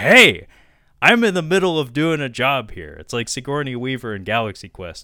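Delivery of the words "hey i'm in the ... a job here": very loud, swooping raised voice. Retelling how a caterer demanded a noisy crowd's attention, acting out a raised voice. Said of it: "raise his voice and be like".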